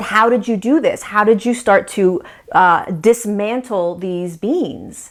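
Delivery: plain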